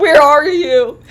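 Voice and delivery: mock very loud, high, tearful, panicked crying. Retelling the school's call after prom, the speaker imitates mom crying on the phone. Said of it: "She's crying on the phone like".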